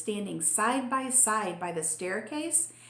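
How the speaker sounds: plain reading voice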